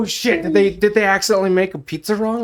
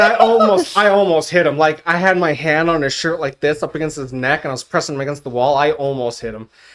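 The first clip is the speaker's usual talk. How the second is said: normal talking voice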